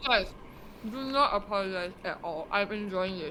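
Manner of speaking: speaking while eating, mouth full. Replying to an apology on a podcast, talking with mouth full. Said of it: "saying that with a mouthful of food".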